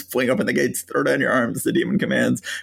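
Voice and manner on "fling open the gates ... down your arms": ordinary delivery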